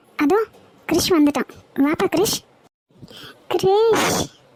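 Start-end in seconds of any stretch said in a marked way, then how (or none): 3.6-4.2 weeping. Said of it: "ஏன் அத்தை அழுகுறாங்க".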